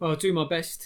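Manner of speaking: loud, sullen, sulky, grudging tone. Reading a story aloud, voicing a messenger: sulky tone. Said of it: "in a sulky tone".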